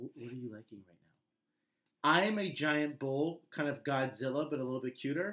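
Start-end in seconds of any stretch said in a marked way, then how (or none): 0.0-2.1 sultry, soft, under-the-breath seductive coaxing murmur. Showing how a shy shopper asks a vendor: under your breath, seductive. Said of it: "under your breath, kind of seduce them".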